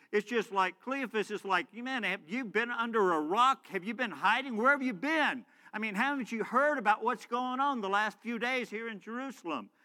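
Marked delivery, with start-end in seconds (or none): 1.7-9.6 acted biting sarcasm, scoffing tone. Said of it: "almost in a sarcastic way".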